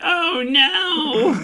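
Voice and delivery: put-on very high distraught cry, drawn-out "no". Showing the character voice done around the house: distraught virgin character voice. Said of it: "my distraught virgin character voice".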